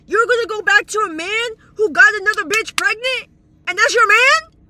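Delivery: furious, very loud, high-pitched screaming rant. Reacting to what someone just said, screaming. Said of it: "I'm screaming too much".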